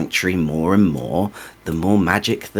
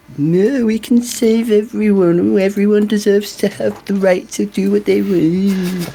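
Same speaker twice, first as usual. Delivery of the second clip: very high, put-on childlike mocking voice; 13 semitones higher, 4 dB louder than usual. Voicing a character who mocks a hero's sister: mocking imitation, sounding childish. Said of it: "You sound like a child".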